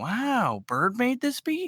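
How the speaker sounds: slow, stretched-out, very high, swooping delivery. Showing the beat tag wanted, in Owen Wilson voice. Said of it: "You don't even need to pay anybody".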